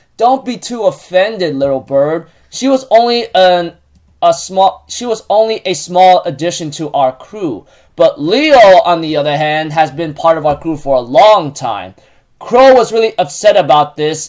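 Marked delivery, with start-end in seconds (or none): none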